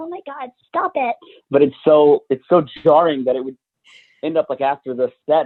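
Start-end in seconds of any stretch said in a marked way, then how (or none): 0.0-1.1 very high, soft, put-on woman's voice. A comedian shows a bit from a stand-up set: female character voice. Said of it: "doing a female character saying".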